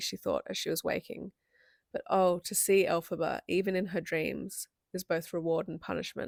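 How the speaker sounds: ordinary delivery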